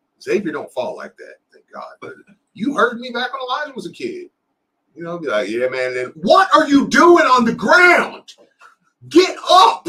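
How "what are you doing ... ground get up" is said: shrill, booming, very loud, high, drawn-out, rising yell. Retelling how he reacted when his son fell: imitating himself screaming at his son. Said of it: "I'm just screaming at my son".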